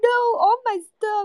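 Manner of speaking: mock very high, tearful, bawling sobbing cry of distress. Retelling how a woman at the counter thought her suitcase was lost, imitating someone crying. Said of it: "she was like crying".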